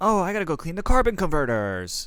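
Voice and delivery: high, whiny sing-song voice swooping up high. Mocking how whiny a film hero sounds: imitating Luke Skywalker's whiny tone. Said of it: "with such a whiny tone".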